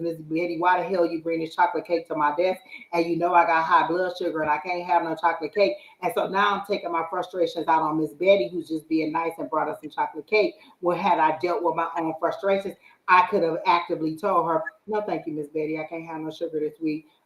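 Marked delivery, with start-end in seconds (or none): none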